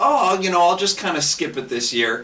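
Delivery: ordinary talk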